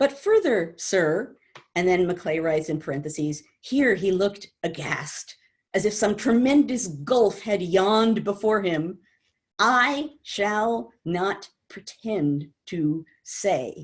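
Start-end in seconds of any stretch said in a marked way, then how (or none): 9.6-13.9 very slow, each word set apart by pauses. Reading a written line aloud that has commas after every word: pause after every word. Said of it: "I read it like that because he puts a comma after every word".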